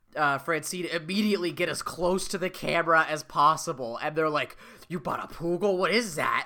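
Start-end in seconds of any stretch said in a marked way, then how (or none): 4.9-6.5 put-on revolted, grossed-out schoolkid voice. Retelling cartoon characters reacting to a toy, imitating disgusted kids. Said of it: "they're disgusted".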